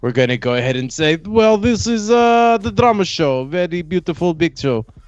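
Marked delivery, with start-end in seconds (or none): 1.2-4.8 put-on Kazakh-accented English, pitched up. Adding an emoji in honor of the Triple G fight: Golovkin impression. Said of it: "That's actually a really good impression".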